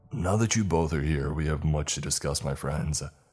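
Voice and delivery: plain reading voice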